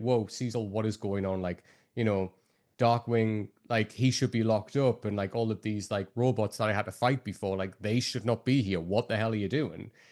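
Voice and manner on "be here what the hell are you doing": ordinary talk, nothing marked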